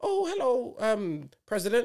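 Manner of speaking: man's high, fake put-on old-lady voice. Retelling a scam call where a man answers in a fake old lady voice. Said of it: "the man's pretending to be a lady, like 80".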